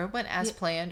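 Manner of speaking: plain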